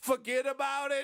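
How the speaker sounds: put-on Italian mobster voice. Mocking a badly written script, the speaker reads its lines in a mock Italian gangster voice. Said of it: "An Italian gangster?".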